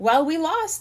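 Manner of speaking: bright, upbeat, high tone. Chip, back in the cabin after a lost baseball game, says it brightly. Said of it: "said Chip brightly".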